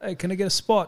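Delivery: horrible, very high put-on Australian accent. Speaker retells asking for a spot at the gym, in a horrible Australian accent. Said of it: "Horrible Australian accent".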